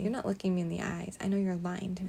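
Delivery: plain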